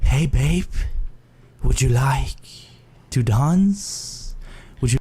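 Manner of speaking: seductive, vampire-like voice. Giving an example line for asking her to dance, in a vampire-like voice. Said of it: "What are you, a vampire?".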